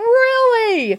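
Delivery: high, slow sarcastic tone. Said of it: "I said".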